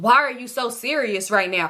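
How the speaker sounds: annoyed, irritated voice with temper building. Retelling how a guy got a little mad when they weren't joking: retelling him getting mad. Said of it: "he was kind of getting mad like".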